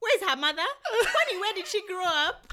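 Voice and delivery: put-on heavy Kenyan accent, very loud and high pitched. Retell your mom's reaction to the pictures you sent her, in a really thick Kenyan accent. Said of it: "you get this really thick Kenyan accent".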